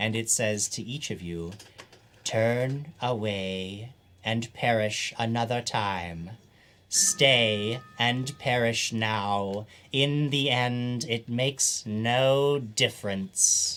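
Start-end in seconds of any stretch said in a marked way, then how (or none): 2.2-13.8 eerie, otherworldly alien voice, very slow. Narrating to the players as a voice speaks in their minds, alien voice in the mind. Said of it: "hear an alien voice in your mind".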